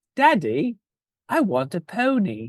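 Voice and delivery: a girl's high, sing-song, put-on English accent. Recalling a movie quote the family used, doing the girl's line in an english accent. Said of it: "in an English accent".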